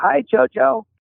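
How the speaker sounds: ghostly woman's voice, very high. Retelling a woman's voice heard on the Vox greeting JoJo: imitating a woman's voice. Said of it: "you hear a woman's voice go".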